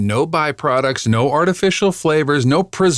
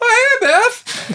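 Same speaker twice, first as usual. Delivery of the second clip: caught off guard, voice jumping way up, very high. Imitating a character greeting someone, voice jumping three octaves. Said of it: "his voice going up three octaves".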